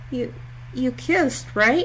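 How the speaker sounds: speaking in a small voice. Cringing away from two men squaring off, asking in a small voice. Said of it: "asks in a small voice".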